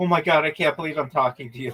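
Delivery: mock fangirling, gushing fan voice. Retelling meeting a viewer from YouTube: imitating a fangirling fan. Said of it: "she was like fangirling".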